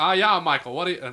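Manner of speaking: put-on Australian accent. Imitating Michael Caine on a phone call, bad Michael Caine impression sounding Australian. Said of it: "Michael Caine's not fucking Australian".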